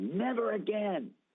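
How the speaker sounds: very high, indignant, outraged yell. Speaker retells suddenly yelling at a man while waving goodbye; retelling a yell. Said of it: "And I begin to yell".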